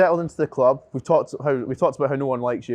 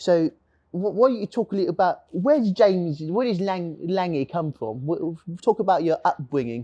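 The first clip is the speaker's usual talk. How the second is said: slow, put-on mock London accent. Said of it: "don't mind me talking like this".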